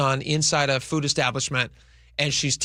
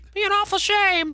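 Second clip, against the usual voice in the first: put-on very high childlike mobster voice. Told to say the line like a kid, the speaker uses a kid voice. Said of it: "Like a kid voice".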